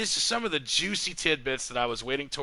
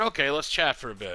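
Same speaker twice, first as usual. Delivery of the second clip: ordinary delivery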